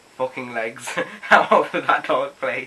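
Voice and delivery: slowed, laughing through the words.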